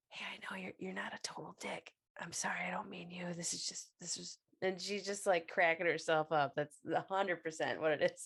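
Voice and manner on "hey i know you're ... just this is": very quiet, barely audible whispered aside. Retelling what she whispers to Billy, retelling her whisper. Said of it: "she kind of whispers".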